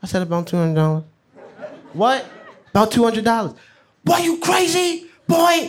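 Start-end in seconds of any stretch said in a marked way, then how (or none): 4.0-5.7 mock screaming, much higher pitch. Retelling a man's reaction to money taken from his briefcase, imitating someone screaming. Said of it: "He was screaming".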